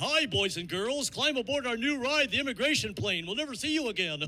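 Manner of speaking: silly, goofy animated cartoon dog voice. Joking about Disney characters with political agendas, doing a Goofy voice. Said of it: "Goofy would meet you at the gate".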